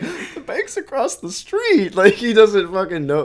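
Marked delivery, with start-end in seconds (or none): 0.0-2.0 very high voice, on the verge of tears. Quoting a favorite movie line, the character about to start crying: imitating someone about to cry. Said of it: "She's about to start crying".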